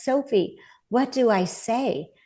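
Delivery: slow, small, broken voice. Retelling what he said on an emergency call, imitating a little broken voice. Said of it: "in his little broken voice".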